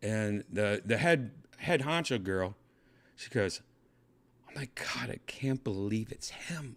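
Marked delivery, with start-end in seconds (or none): 4.5-6.8 hushed, confiding whisper. Retelling what the head honcho girl at the after party said: imitating a whisper. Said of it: "she whispers that to me".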